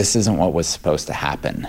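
plain

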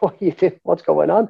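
play-acted startled call, alarm kept mild. Retelling waking a driver who fell asleep at the wheel: imitating his own shout. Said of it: "I'm shouting".

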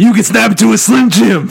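hoarse, rough character voice. Telling a made-up story, voicing the Macho Man: Macho Man impression. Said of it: "My voice came back".

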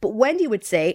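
ordinary delivery

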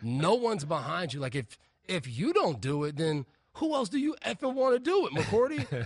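play-acted, swooping, sarcastic jab. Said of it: "Bill would hit you with this sarcasm".

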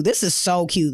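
ordinary talk

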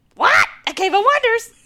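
high-pitched put-on cartoon voice. Quoting Aladdin for the others: Iago voice. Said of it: "I just like to do Iago".

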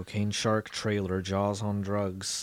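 very quiet, low, deflated, beaten murmur. Talking with others about an upcoming film release, sounding defeated. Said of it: "you sounded so defeated just now".

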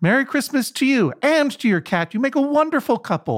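put-on very high, happy, excited drunk gushing. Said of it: "he was so happy and excited".

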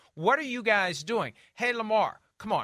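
mock yelling. Imagining how a man would yell at the screen, imitating someone yelling. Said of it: "He's going to be yelling at the screen".

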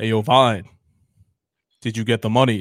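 deep, loud voice with odd, unneeded pauses. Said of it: "It's deep, and then he does these weird, unnecessary pauses".

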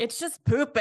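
terrible, bad, fake put-on British accent. Quoting a show character's one-liner while discussing its seasons: terrible British accent. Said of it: "A terrible British accent".

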